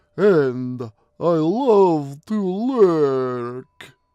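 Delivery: sinister, creepy voice, drawn out and lurking. A character answers a startled companion, creepy voice. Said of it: "he said in a creepy voice".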